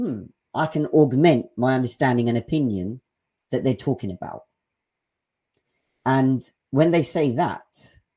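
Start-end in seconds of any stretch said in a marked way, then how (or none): none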